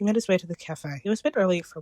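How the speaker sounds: plain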